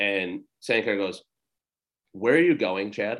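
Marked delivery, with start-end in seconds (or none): 2.1-3.2 put-on, mock, belittling scolding tone. Retelling what a man called to someone walking away, mock-scolding tone. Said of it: "Like almost like scolding type".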